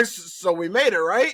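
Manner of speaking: halting, slow, amazed, surprised, unsure delivery. Imitating a flight attendant after the plane lands, imitating surprised flight attendant. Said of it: "flight attendants sound surprised".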